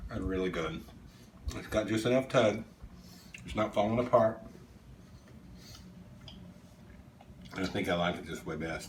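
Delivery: speaking while chewing, mouth full of food. Taking a bite off the bone, the speaker talks to viewers, talking with mouth full. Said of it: "Sorry for talking with my mouth full".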